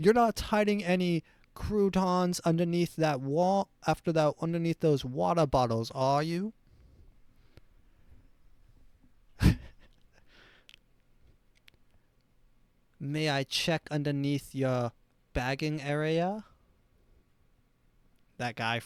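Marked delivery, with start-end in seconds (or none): 0.0-16.4 put-on German accent. Joking about a Walmart employee asking to see your papers, put-on Nazi German accent. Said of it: "this is supposed to be a Nazi accent".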